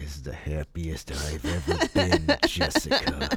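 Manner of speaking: low, swooping delivery through gritted teeth. Film reviewer mocks Michael Shannon playing a happy man: imitating him through gritted teeth. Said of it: "He's just gritting his teeth like".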